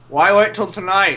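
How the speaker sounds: words garbled, talking through a mouthful of food. Voicing a character eating steak: talking with a mouth full of steak. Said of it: "with a mouthful of steak goes".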